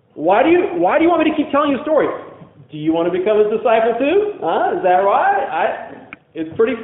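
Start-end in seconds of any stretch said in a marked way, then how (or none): 0.2-5.5 sassy, mocking, needling sarcastic tone. Retelling the healed man's answer to the questioners: acting out a sassy, sarcastic retort. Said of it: "gets really sassy here. Really sarcastic".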